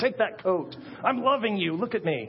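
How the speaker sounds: forced caring tone through clenched, gritted teeth. Acting out forcing a coat on someone cold: through gritted teeth. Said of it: "walk to them with like gritted teeth".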